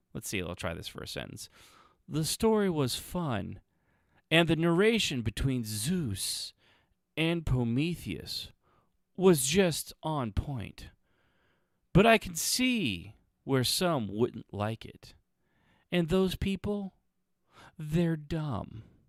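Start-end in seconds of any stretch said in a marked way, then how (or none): 2.0-10.3 calm, slow radio read, slightly higher, Zeus stretched out. The speaker tries one review sentence, pretending it is NPR; NPR radio voice. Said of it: "Maybe if I pretend that this is N P R".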